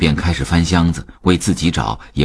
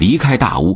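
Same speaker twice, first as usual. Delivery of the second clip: plain reading voice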